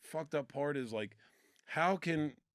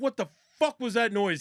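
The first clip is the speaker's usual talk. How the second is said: mock pissed-off drill sergeant, loud and pitched-up; 7 semitones higher, 6 dB louder than usual. Retelling how a drill sergeant overheard a noise: imitating a pissed-off drill sergeant. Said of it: "He came out all pissed off".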